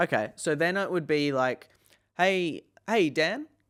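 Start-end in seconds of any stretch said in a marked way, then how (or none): 2.2-3.4 casual, chummy, familiar, pitched-up friendly tone. Showing how to open a cold call: familiar tone. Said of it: "so I'd use familiar tone".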